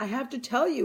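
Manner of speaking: choppy, halting, non-native broken English. Retelling what a woman told the speaker, imitating her broken english. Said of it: "in her broken English".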